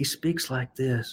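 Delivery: very quiet, very soft, low voice. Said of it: "his voice is really low".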